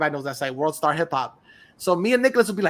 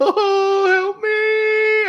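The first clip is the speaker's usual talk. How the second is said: play-acted, very high, loud sobbing, wailing breakdown cry; 5 dB louder than usual. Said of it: "the audio clip of him going".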